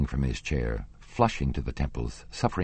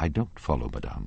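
ordinary delivery, nothing marked

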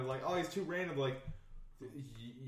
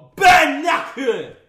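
yelled at full volume, very loud and high; 14 semitones higher, 25 dB louder than usual. Talking with others about games with English audio; very loud shout. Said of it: "That was very loud".

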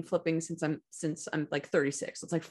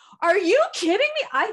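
acted-out loud scream, much higher, louder; 10 dB louder than usual. Retelling spotting two people they knew walking in the door: retelling a loud scream. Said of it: "I screamed so loud".

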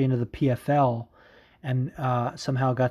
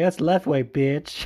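put-on hipster voice; 3 semitones higher than usual. Joking about combat sports fans, imitating a hipster fan. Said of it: "a hipster combat sports thing to be like".

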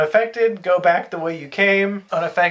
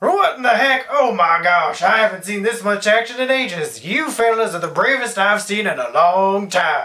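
put-on elderly southern gentleman character voice; 2 semitones higher than usual. Game master voicing a ghostly figure appearing to the players, in an old southern gentleman voice. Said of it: "a ghostly spectral figure appears before you of an old southern gentleman".

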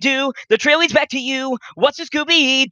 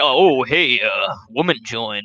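put-on flirty voice dropped an octave, lower. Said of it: "you can hear their voice drop an octave".

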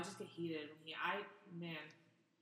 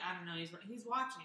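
usual speaking voice

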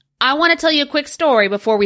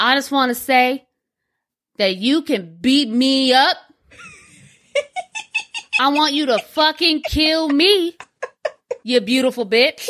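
mock speech of a clearly drunk man; 4 semitones higher than usual. Retelling what a drunk man at a bar said: imitating a drunk man. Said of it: "he's clearly drunk".

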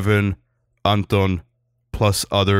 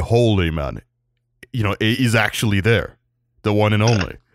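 normal talking voice

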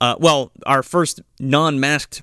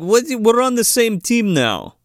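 fake Russian accent, higher pitch, slower pace; 9 semitones higher than usual. Retelling a scene, the speaker quotes Sid Haig in a fake Russian accent. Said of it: "I guess I'm doing Russian, but it's not really Russian".

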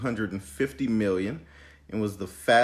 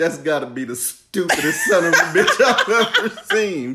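mock screaming, higher and louder; 7 semitones higher, 9 dB louder than usual. Retelling a favorite movie scene, imitating a coach screaming. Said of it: "especially when his coach was screaming".

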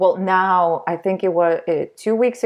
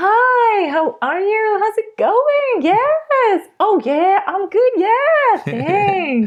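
bright, very high, swooping, sing-song cheery Australian chatter. Describing how Australians talk all the time, imitating cheery Australians. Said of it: "Australians are all the time like".

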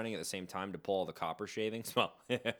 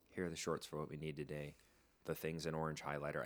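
hushed, much quieter voice with lower pitch; 5 semitones lower, 8 dB quieter than usual. Retelling how they spoke to him in a quiet room, lowered voice. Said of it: "So I lower my voice".

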